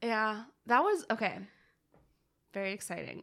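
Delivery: sarcastic-sounding tone. Reacting to another speaker's shared info: sounding sarcastic. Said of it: "that sounded so sarcastic".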